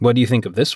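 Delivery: very low voice, fighting back laughter. Coop holds up a dress and asks her opinion, barely suppressing a smirk. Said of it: "Despite his vain attempts to contain a smirk".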